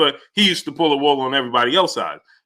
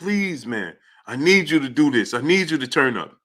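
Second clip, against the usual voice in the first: hard pleading, begging tone; 4 dB quieter than usual. Retelling a trainer begging his fighter in the corner: imitating Floyd Mayweather begging. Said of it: "He pretty much begged Gervonta".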